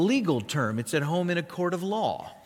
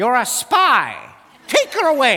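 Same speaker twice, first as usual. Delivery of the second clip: put-on Scottish accent, nasal and pitched high; 7 semitones higher, 8 dB louder than usual. Imagining Darth Vader heard this way in a 1977 theater, do a Prowse impression, high nasal Scottish tone. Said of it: "Prowse had kind of a high, nasally, Scottish tone".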